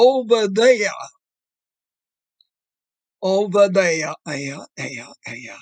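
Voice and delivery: there with thick, heavy New England vowels. Describing how people long in New Hampshire spoke, the speaker demonstrates a heavy New England accent. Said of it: "they spoke with a heavy New England accent that was particularly evident in words like".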